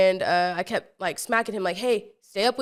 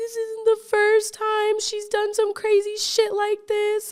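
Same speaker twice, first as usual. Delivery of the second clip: mock tearful crying voice, higher pitch; 13 semitones higher than usual. Retelling what the little brother said in the car: imitating someone crying. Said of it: "he's all crying".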